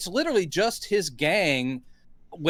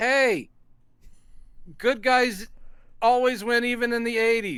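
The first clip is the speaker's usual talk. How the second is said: put-on triumphant shout, tossed out, pitched up; 5 semitones higher than usual. Recapping an event, quoting a man calling out, retelling a shout. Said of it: "he shouts out".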